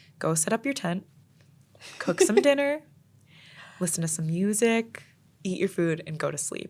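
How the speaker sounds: put-on gentle, soft, sweet, soothing voice. Retelling what a stranger told the speaker, imitating a sweet, calming voice. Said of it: "in this like sweet, calming voice".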